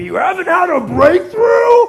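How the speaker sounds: booming, high, loud, slow swooping intonation. Showing the audience a slide of Tony Robbins: Tony Robbins voice. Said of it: "That's my Tony Robbins impression".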